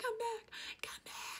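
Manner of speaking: whispered, voiceless, raspy and panicked. Speaker recalls the end of Titanic when Rose couldn't talk, imitating Rose's voiceless panic. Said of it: "Rose was like freaking out and she was like".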